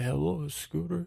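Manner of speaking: enigmatic, mysterious voice. Retelling answering the phone to a caller: imitating a mysterious voice. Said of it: "it's like this, uh, mysterious voice say".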